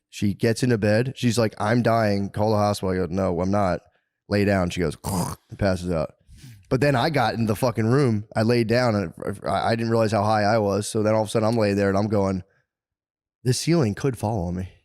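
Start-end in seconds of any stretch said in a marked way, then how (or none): none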